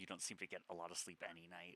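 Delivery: barely-there half-whisper, very low, soft and hushed. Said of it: "she, like, whispered".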